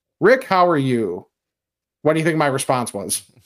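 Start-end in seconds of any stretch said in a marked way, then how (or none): 0.2-1.3 dead serious, very straight tone. Retelling how a friend opened a radio interview: very serious, imitating Chris Ranji. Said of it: "very serious".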